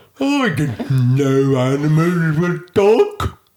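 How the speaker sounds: lumbering, high, very slow hippo voice. Playing a hippo in a talking-animal game: put-on hippo voice. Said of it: "That's a hippo".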